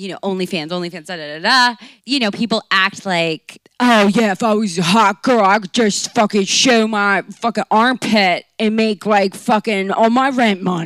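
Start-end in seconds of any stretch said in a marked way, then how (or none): 4.3-10.9 put-on Baltimore-accented speech. Voicing what people act like they would say, in a Baltimore accent. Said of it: "What accent was... That was a deep".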